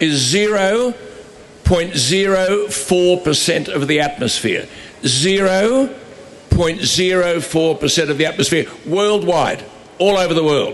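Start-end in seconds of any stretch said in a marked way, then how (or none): 0.0-9.6 slow, deliberate, carefully laid-out words. Making a point about carbon dioxide to listeners, said slowly. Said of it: "you've got to say this slowly".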